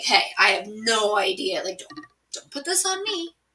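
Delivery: earnest, pleading, protesting voice. Retelling how Henry denied ordering the killing: imitating Henry pleading. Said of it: "So he's pleading".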